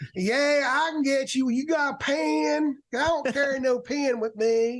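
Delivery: very slow, drawn-out, drawling delivery. Acting out Dina answering a fan who asks for an autograph: imitating Dina. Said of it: "I'm glad you did that impression".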